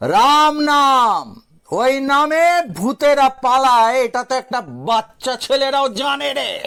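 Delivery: speaking loudly. Reading a ghost story aloud, the hero threatens the ghost: raised voice. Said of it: "Gangadhar গলা তুলে বলল".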